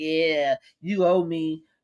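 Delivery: put-on sleazy, low, slow dirty-old-man voice. Retelling what a man said to the speaker, in a dirty old man voice. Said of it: "it was like the way he was saying it... like he was like a dirty old man".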